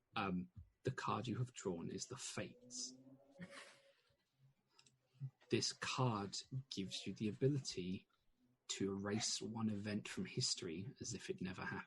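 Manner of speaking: very quiet, hushed words close to the ear. Narrator voicing her as she leans forward about the drawn card: very quietly in your ear. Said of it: "says very quietly in your ear".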